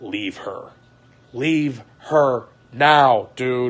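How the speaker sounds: put-on fed-up, exasperated voice. Retelling what Mike told the speaker, imitating Mike sounding fed up. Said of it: "Mike was fucking fed up".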